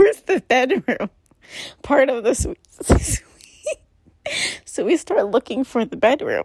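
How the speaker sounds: swooping speech, cracking up through laughter. Telling a story and trying to compose yourself, laughing while talking.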